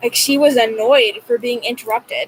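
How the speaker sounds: usual speaking voice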